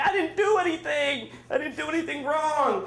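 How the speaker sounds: high, offended, protesting tone. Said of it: "I was offended because I'm like".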